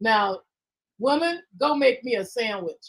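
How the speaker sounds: slow, earnest, dead-serious tone. Retelling what a classmate would say, not kidding: imitating a serious, deadpan order. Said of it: "but he'd be serious".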